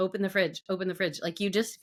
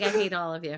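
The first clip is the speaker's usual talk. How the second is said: ordinary talk, nothing marked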